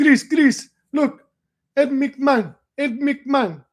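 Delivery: put-on old woman's thick Greek accent, very high. A speaker imitating his grandmother calling to him during a TV commercial, heavy Greek accent. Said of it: "with her heavy Greek accent".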